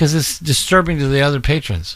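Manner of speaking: usual speaking voice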